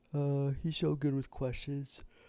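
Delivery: high, loud words pulled through a yawn. Streamer telling chat about a podcast host, yawning while talking. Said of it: "I'm so sorry for yawning".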